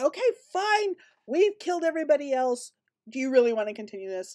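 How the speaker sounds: menacing, threatening, looming tone. Suggesting what another player's character says, coming out menacingly. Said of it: "you come menacingly out there and just say".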